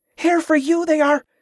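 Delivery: very high hissing voice. A woman on crutches tugs a man's arm, urging him away, hissing. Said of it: "she hissed".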